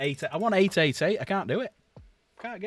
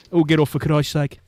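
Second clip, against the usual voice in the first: put-on louder Brummie Birmingham accent; 2 semitones lower, 8 dB louder than usual. Telling a joke, delivering the wife's punchline in a brummie accent. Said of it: "the Brummie accent".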